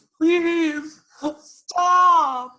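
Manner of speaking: very high, weepy, tearful pleading, "stop" drawn out. Player voicing their game character cowering and begging: tearful begging. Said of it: "crying a little bit".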